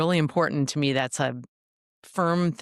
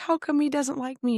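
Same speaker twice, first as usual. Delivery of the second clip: high, tearful, acted-out crying voice; 11 semitones higher than usual. Retelling a conflict meeting, quoting the other person: imitating someone crying. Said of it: "she was crying".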